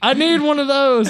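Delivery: very high-pitched, yelled-out call. Player describes their character's action, then is yelling out the line. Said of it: "I just yell".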